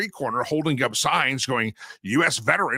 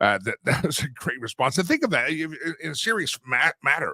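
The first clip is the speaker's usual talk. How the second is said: usual speaking voice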